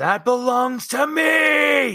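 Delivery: very high, shrill scream of hatred and anger, "me" drawn out. Game master voicing a dead figure that speaks in the player's mom's voice: screaming with hatred. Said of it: "unleash a scream of hatred and anger as he says".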